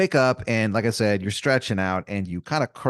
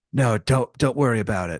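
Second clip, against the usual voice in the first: strange, weird put-on monster voice. Retelling the monster under the bed talking to Aaron, doing a bizarre monster voice. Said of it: "bizarre kind of voice".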